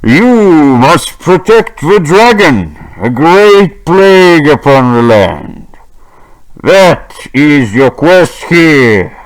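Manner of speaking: grand, godlike, proclaiming voice. Narrating a game scene, the player's father announces the quest in a thunderous voice. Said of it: "you hear a thunderous voice of your father that says".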